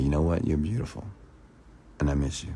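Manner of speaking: hypnotic, mesmerizing, entrancing, spellbinding voice. Showing what using language properly sounds like: hypnotic voice. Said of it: "you talk like this".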